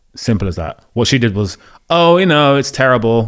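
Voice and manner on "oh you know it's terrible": put-on smug voice. Retelling how an actress answered about a film: imitating someone smug. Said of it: "no need to be that smug".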